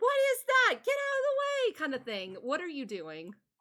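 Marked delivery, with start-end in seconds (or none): 0.0-1.8 acted-out very high, loud, panicked crowd screaming. Voicing people to the north who see something coming: screaming in fear. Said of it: "screams and people saying".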